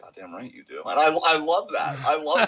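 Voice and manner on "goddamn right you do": very quiet, very low mutter under the breath. Retelling a press conference reply: muttering under his breath like Roman Reigns. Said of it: "under his breath, he's like".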